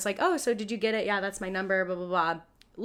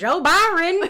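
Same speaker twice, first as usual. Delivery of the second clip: very shrill, very high, very loud shriek; 9 semitones higher, 8 dB louder than usual. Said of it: "Eric is screaming in the background".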